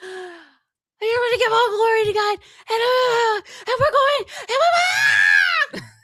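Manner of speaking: very high, slow, drawn-out voice cracking apart. Retelling an excited quarterback's victory speech, imitating Mendoza's voice cracks. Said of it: "had his Howard Dean moment where he was like".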